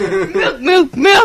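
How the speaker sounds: repeated frantic crying out. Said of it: "He's like".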